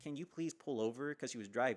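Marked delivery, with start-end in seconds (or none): 0.0-1.1 acted-out pleading, begging, much higher. Speaker retelling what they said to a crying woman who was driving, retelling a pleading request. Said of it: "I'm basically ple-".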